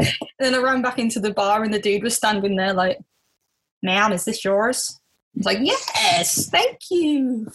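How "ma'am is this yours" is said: polite, put-on American accent, male voice. Retelling what a man at a bar said to her, in an american accent. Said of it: "That was my American accent for you all".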